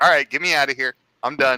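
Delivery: calling upward. A character fed up with an adventure calls out to be pulled out: yelling up into the air. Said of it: "He's like yelling up in the air".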